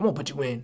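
imitated raspy older voice. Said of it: "he has one of those raspy voices".

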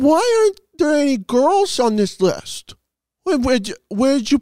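mocking childish voice. Reading out online comments about a list, mocking commenters as little kids. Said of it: "Why Are you talking like that?".

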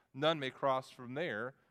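ordinary delivery

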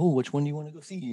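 cartoon-like character voice. Acting out choosing between a couple of movies coming out, like a Rocky and Bullwinkle impression. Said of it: "Was that your Rocky and Bullwinkle impression?".

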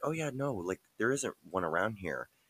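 mock matter-of-fact deadpan, no-fuss, not joking. Retelling how the other speaker answered: imitating a deadpan reply. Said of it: "you looking at me just deadpan".

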